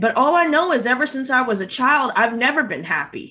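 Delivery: ordinary talk, nothing marked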